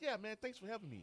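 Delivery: very high-pitched, open-sounding voice.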